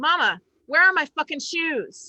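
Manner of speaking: put-on high, shouted, yelling little kid voice. Retelling how a little daughter shouted across the camp: imitating a child shouting. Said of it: "she shouts at me".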